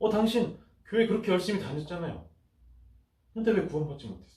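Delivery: high-pitched, mocking, taunting voice.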